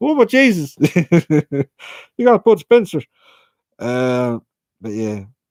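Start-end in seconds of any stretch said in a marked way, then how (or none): 0.0-3.0 put-on very high, slow, drawn-out Irish accent. Retelling what a man would say on seeing Bud Spencer in the room: Irish accent. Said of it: "in his Irish accent".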